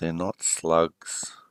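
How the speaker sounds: low, under-the-breath half-whisper to himself. Game master voicing a character's aside to the players, half-whispering under his breath. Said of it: "just under his breath whisper".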